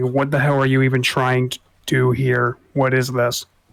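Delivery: irritated, somewhat angry, annoyed tone. Voicing a character who demands to know someone's goal: kinda angry. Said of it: "He'll be kinda angry when he says it".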